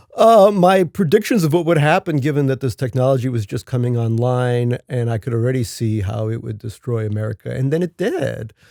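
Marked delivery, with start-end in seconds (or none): 7.5-8.5 put-on valley girl manner of speaking. Finishing a remark about a past prediction, in a valley girl way of speaking. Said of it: "I said that in a kind of Valley Girl way".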